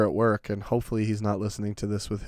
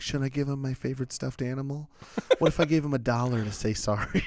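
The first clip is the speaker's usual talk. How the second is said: put-on sweet little boy voice, higher; 4 semitones higher than usual. Retelling how a kid offered to apologize: imitating a sweet little boy. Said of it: "then he was sweet boy".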